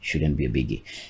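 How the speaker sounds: quiet muttering to oneself.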